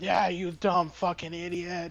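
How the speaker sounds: put-on mild yell, played light. Retelling how a customer's wife yelled at them: imitating a woman yelling. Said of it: "yelling at me".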